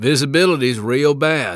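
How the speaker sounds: put-on loud drawling Texas accent with stretched vowels. Talmage speaks in the small aircraft engulfed by clouds, looking at his watch, in a Texas drawl. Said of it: "said in his Texas drawl".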